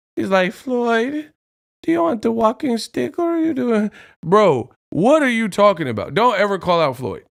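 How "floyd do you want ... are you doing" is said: cocky, high-pitched taunting voice. Act out a man calling out Floyd Mayweather, in a mock high-pitched voice. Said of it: "call out Floyd Mayweather with a high-pitched voice".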